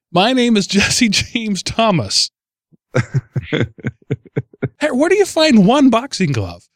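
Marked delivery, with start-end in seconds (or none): 0.1-2.3 put-on drunk man's shout. Describing a drunk man on a cop car shouting his name: imitating Jesse James Thomas shouting. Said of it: "He's shouting".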